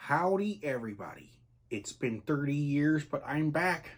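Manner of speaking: bad villain voice, spoken very softly. Greeting everybody on a comeback after a long absence; bad Dr. Evil impression. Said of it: "worst Doctor Evil impersonation ever".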